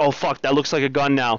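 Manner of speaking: ordinary delivery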